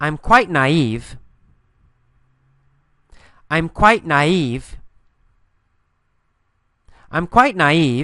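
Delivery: slow, carefully paced model-sentence delivery.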